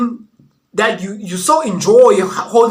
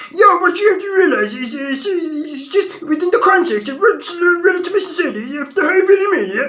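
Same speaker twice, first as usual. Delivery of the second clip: goofy, pitched-up voice, as if throat blocked; 8 semitones higher than usual. Doing an impression of Troy Francis with a goofy-sounding voice. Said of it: "That's Troy Francis!".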